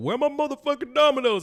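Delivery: squeaky, very high, irate, angry voice. Retelling a skit's funny moment, imitating the dad's angry complaint. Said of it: "I love how he's like".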